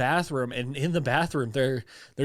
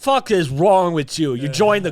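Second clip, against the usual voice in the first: put-on raised, typical Brooklyn tough-guy accent; 4 semitones higher, 7 dB louder than usual. Podcaster acting out how a friend's dad talks, imitating a Brooklyn tough guy. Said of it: "typical uh, Brooklyn mook".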